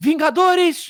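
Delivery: very high, called-out rallying voice. Retelling the movie scene, imitating Captain America's call. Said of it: "aí ele fala assim".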